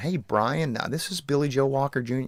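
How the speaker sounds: soft, articulate, soft-spoken professor voice. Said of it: "sounded like a like a professor or something on the phone, just very well spoken".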